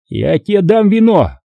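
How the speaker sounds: barked, drill sergeant style. Reading a story, the sergeant major barks at a young man: barked order. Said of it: "рявкнул на него старшина".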